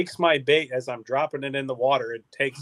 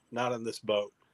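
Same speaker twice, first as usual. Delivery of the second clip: put-on deadpan, flat tone, quieter; 3 semitones lower, 8 dB quieter than usual. Retelling the captain's answer to the grandpa's question: imitating a deadpan reply. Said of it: "looked at him dead in the face and goes".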